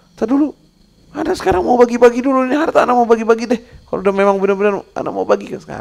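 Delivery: very high, fast, desperate pleading.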